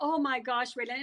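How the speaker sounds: plain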